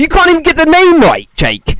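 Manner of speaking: mad, heated, angry, swooping rant. Speaker argues with jake over a creature he dislikes, angry. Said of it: "I got really angry there".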